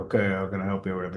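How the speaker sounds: bored, toneless, fast, flat monotone. Explaining how to talk to clients on the phone, mimicking a monotone person. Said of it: "they don't want some monotone person".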